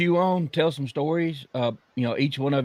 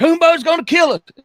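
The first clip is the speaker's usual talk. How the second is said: very high, shrill, loud yell; 8 dB louder than usual. Retelling seeing a truck come around the curve: retelling own yell. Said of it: "I yelled out".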